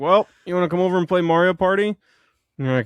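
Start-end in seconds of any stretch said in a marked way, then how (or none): 0.0-1.9 mock drunk speech, higher and louder. Retelling inviting a friend over after drinking: imitating own drunk self. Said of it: "my drunk ass is like".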